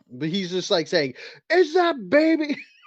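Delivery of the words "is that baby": acted furious, shrill, high angry yelling. Retelling what a large, angry man said: imitating someone yelling angrily. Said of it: "so he's yelling".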